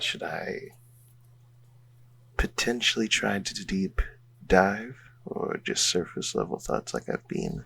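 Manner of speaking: whispered aside. In a tabletop game, asking a companion during mind-reading, whispering. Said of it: "And I'm whispering to Alandi right now".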